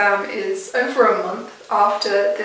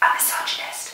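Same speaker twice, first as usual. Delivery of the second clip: soft, breathy, whispered under the breath. Lecturing on Surrealism and slipping in a whispered aside.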